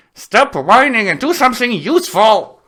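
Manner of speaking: shrill, high and loud, through gritted teeth. Pixie, hauling screaming Gary through the air, speaks to him through clenched teeth. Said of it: "through clenched teeth".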